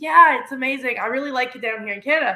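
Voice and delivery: ordinary delivery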